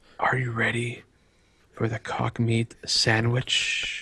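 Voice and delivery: rough, raspy, rasping delivery. Voicing a dark figure on the roof during the game: raspy voice. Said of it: "The figure begins to speak in a raspy voice".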